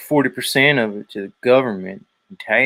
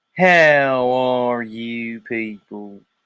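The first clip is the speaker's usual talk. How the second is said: very slow, put-on Southern drawl.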